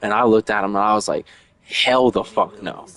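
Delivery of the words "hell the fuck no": put-on slow, blunt, point-blank flat delivery. Retelling a reply to Matthew's claim: retelling own blunt reply. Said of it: "I said that so straight out".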